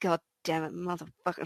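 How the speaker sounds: very quiet, very soft, under-the-breath grumbling mutter. Voicing a character who finds the road blocked: muttering under breath. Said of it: "muttering under my breath".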